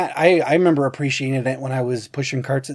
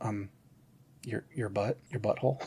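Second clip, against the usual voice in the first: very quiet, hushed, matter-of-fact tone; 4 semitones lower, 15 dB quieter than usual. Retelling a movie scene, answering as if it's obvious: imitating Kristen Wiig stating the obvious. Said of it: "as if knowing that everyone should know this".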